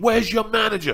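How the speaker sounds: loud, high, enraged voice. Retelling a customer demanding the manager, imitating a customer in a rage. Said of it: "in the middle of his rage".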